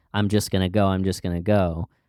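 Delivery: ordinary talk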